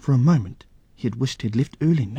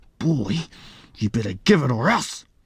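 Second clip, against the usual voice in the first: snarling, menacing, threatening bully voice. Narrating a story, Rata, getting angry, demands Pee-wee's lunchbox, snarling. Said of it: "he snarled".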